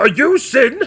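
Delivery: loud boisterous voice. Narrating a scene, the speaker voices a character who skips to the table, loud and boisterous. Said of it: "he will speak with a loud, boisterous voice".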